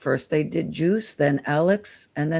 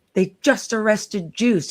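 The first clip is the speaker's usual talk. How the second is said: put-on screaming, higher pitch; 4 semitones higher than usual. Retelling calling someone on the phone about the arrest: retelling own scream. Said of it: "And I screamed".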